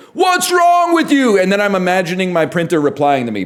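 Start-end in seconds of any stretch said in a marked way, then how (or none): 0.2-1.4 put-on very high, pitched-up screaming outburst. Telling how they react to their printer, retelling a scream. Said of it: "I'm like screaming at my printer".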